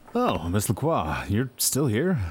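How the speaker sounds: startled, taken-aback tone. Ending a call, a doctor notices Miss Lacroix is still there, surprised. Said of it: "You sound surprised".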